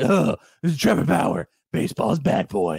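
dark caped-hero voice. Redoing a sarcastic intro of a baseball player: Batman voice. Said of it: "that's Batman".

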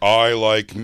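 slowed-down mock dumb straight-guy voice. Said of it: "doing a straight voice".

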